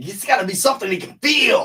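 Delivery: hyped-up, high-pitched, loud shout.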